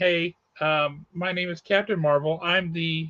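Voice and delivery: plain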